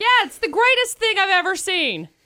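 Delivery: heavy, sneering, mocking sarcasm. Reacting to a story about edited school pictures: sarcastic.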